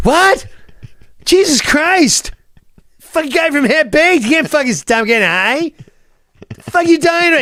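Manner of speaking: play-acted, shrill, outraged rant, voice very high. Retelling a man's reaction to the speaker refusing to get high, imitating an angry man. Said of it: "He was so angry that I didn't want to get high".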